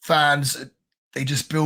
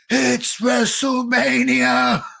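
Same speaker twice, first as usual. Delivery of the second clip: put-on shrill, very high, raspy excited shriek; 10 semitones higher, 4 dB louder than usual. Retelling greeting a friend at the door late at night: retelling own scream. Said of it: "I screamed".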